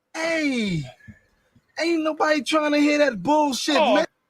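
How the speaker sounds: very high-pitched comic character voice. Saying the line in a Martin voice. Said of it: "in my Martin voice".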